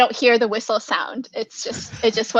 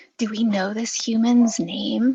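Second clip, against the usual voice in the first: quiet whispering. Whispering in character to the group while walking up: whispering to the group. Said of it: "turn to whisper to the whole group".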